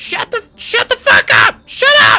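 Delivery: very high, very loud, shrill screaming. A game narrator voices Granny yelling at the player: Granny yelling. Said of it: "Granny just yells to you".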